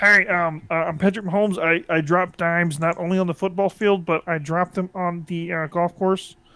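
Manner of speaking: put-on voice sounding like a frog. After talking about Tom Brady's golf putt, doing a Patrick Mahomes impression. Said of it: "are you doing Kermit the Frog?".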